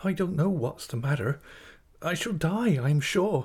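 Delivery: halting, high-pitched, trembling, faltering delivery. The narrator's mother answers an older woman's question, faltering. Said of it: "faltered my mother".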